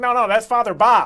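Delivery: very loud, thick, put-on Chicago accent. Imitating people in chicago correcting a name: thick chicago accent. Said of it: "in their thick Chicago accents".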